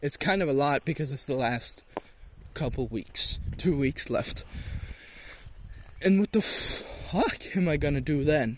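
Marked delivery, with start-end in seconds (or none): 6.0-8.6 voice breaking slightly with a small crack. Talking about having two weeks of school left, little voice crack. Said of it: "A little voice crack".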